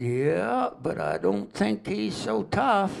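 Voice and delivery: slow Tennessee drawl, lazy vowels, high and swooping. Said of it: "they talk kinda slow and drawl down there".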